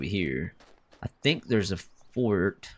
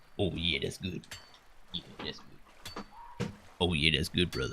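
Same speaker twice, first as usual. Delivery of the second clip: put-on extra deep voice, lower and quieter; 4 semitones lower, 8 dB quieter than usual. Testing a joke voice after drinking some water: put-on extra deep voice. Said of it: "I'm gonna make my voice extra deep".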